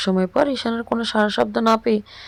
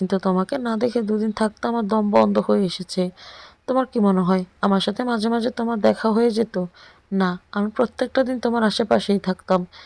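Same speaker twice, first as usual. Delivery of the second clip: usual speaking voice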